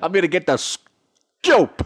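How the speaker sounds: booming New York accent. Playing a member of the press, repeating a line in a New Yorker accent. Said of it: "you changed it to like a New Yorker".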